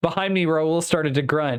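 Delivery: ordinary delivery, nothing marked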